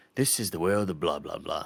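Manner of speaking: put-on English accent, laid over the voice. Imitating a game character who explains the world: put-on English accent. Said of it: "it's an English guy".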